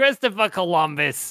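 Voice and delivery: play-acted, high, angry New York mom voice yelling. Joking about a director's mom yelling his full name, imitating an angry New York mom yelling.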